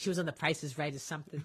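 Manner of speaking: very low, deep, soft put-on New York accent. Chatting with another speaker, repeating a remark in a New York accent. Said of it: "I gotta use my New York accent".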